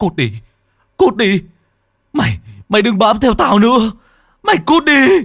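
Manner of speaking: breathless, panting whimper, very high, shrill and loud. Narrator reading a running boy's line as he looks back, panting, whimpering. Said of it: "ngoái đầu lại đằng sau hổn hển, mếu máo".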